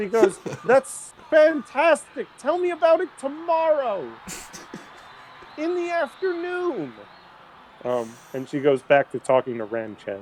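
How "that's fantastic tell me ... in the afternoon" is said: very high, slow motherly voice. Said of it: "Big mom energy".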